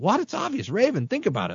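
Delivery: high, bright voice with pitch swooping around. Joking about lording Bible knowledge over others, Buddy the Elf voice. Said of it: "In Buddy the Elf voice".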